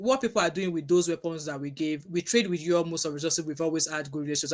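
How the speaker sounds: usual speaking voice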